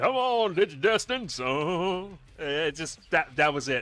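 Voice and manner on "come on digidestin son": high, slow drawl, "son" stretched out. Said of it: "came out with that whole [name] impersonation".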